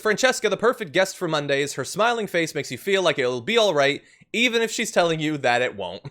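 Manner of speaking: normal talking voice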